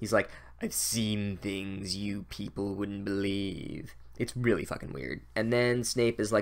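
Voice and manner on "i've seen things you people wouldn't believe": sinister villain voice, quieter and slower. Speaker describing Snape's potions speech, quoting in the Blade Runner villain voice. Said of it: "He seriously sounds like the bad guy from Blade Runner".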